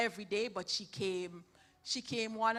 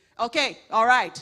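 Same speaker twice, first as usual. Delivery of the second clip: loud, authoritative preacher voice. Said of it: "the pastor would come up and say".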